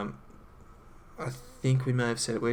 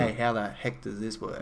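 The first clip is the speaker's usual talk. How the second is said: usual speaking voice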